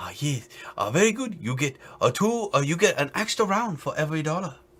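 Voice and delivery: exaggerated put-on Chinese accent. Playing the waiter taking an order, in a racist mock chinese accent. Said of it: "Let me channel my inner, very racist Chinese accent".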